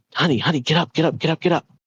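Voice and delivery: high, urgent, frightened, panicked voice. Retelling a wife shaking her husband awake: imitating frightened urgent waking. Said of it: "Pure adrenaline racing fear".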